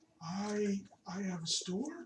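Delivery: put-on very old woman's voice, slow and high. Voicing an old woman with a store: very old woman voice. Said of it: "She looks like a very old human woman".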